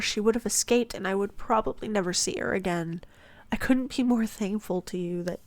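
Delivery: plain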